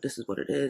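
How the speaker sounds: ordinary talk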